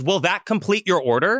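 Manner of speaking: blaring, very loud drive-thru speaker voice. Retelling a drive-thru order when the speaker volume jumps: imitating a very loud speaker voice. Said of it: "It then goes to a fucking ten".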